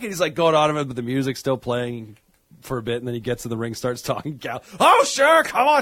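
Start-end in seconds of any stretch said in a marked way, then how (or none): 4.8-5.8 pissed, angry rant, high-pitched and loud. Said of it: "[name]'s just pissed and angry".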